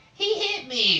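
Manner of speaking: very high, loud, squeaky dorky voice. Recounting Jameson's reaction after being slapped during the match, Jameson's dorky voice. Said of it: "like in this dorkiest voice that he does".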